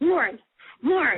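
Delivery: mock-frantic, panicked calling out. Retelling grabbing her best friend Lauren on seeing him, acting out freaking out. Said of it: "I'm freaking out".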